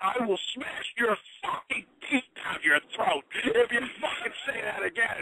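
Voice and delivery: very high, screamed, maniacal, threatening, acted-out yell. Retelling how a wrestler threatened a trainee during drills: imitating a threatening yell. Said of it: "he's threatening to kill people and yelling".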